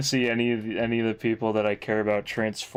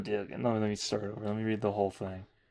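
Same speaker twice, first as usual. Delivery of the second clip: ordinary delivery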